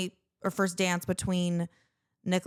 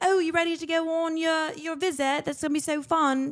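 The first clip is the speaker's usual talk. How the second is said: lighthearted, playful put-on British accent, pitched up; 9 semitones higher than usual. Retelling talking to a child before a parent visit, in a playful British accent. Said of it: "slip in and out of a British accent for fun".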